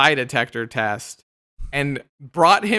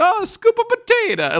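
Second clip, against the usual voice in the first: put-on horrible, laid-on Italian accent, very high pitched. Retelling a prank from a TV show, imitating Joe: horrible Italian accent. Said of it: "horrible Italian accent".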